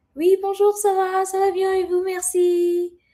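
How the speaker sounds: very high voice speaking French. Explaining how her voice changes in French, demonstrating her French-speaking voice. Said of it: "ma voix est un peu plus".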